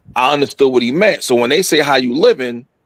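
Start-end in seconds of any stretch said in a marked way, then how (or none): none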